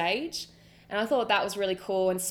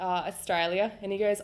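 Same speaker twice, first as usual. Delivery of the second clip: ordinary delivery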